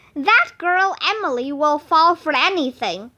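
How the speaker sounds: plain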